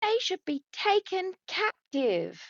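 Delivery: really loud shout, pitched way up. Shouting in character across a crowd at a show: shouting really loudly. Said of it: "really loudly".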